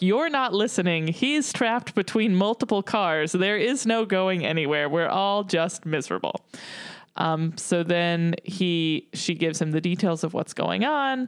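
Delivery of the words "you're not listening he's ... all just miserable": ordinary talk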